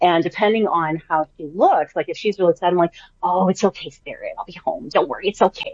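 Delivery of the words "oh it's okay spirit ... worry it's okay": motherly, mommy-like voice. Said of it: "I still have my mommy voice with them".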